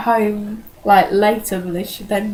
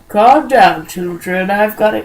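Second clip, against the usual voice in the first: put-on wise old dog voice, louder; 4 dB louder than usual. Imitating the old dog Shadow from a film: old and wise voice. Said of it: "that's old and wise voice".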